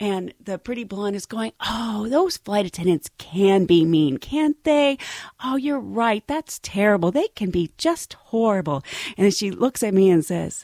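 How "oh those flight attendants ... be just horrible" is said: very sweet, soothing, sympathetic voice. Retelling a coworker comforting a new flight attendant: imitating a sweet sympathetic voice. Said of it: "she's being so sympathetic and so nice".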